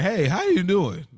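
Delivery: high voice cracking upward. Recalling when Eugene popped up, imitating Eugene's voice cracking. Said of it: "his it's like his voice cracked".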